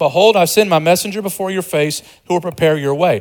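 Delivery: ordinary delivery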